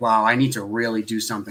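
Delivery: ordinary talk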